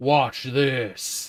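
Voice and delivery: very loud, full-volume booming voice. Acting out a voice heard in one's head, in a deeper voice. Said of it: "you hear this deeper voice that says".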